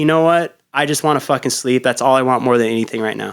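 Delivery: ordinary talk, nothing marked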